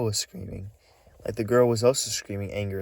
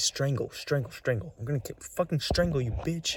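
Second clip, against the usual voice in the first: put-on male scream, higher; 5 semitones higher than usual. Retelling a man heard arguing with a woman: imitating a man screaming. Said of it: "He kept saying".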